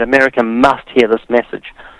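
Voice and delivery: plain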